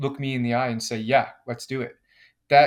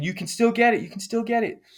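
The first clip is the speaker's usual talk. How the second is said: mock, very high, urgent screaming cheering yell; 10 semitones higher than usual. Retelling a race while the dad screams encouragement: imitating dad screaming. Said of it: "he's screaming at me saying".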